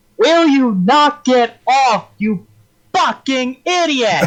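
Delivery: very high-pitched, angry shout. Voicing a character who yells at the captain on the ship: yelling at the captain. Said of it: "He yells at the captain and said".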